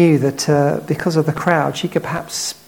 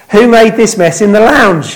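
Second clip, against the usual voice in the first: very loud, high-pitched, demanding tone; 5 semitones higher, 10 dB louder than usual. Speaker acting out a parent finding a messy living room; loud voice. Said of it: "they say in a loud voice".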